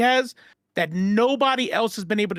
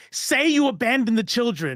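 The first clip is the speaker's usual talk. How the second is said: put-on, insistent, mild, contained yell; 4 semitones higher than usual. Telling about a man screaming at the woman who raised him, retelling a yell. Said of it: "and he's yelling".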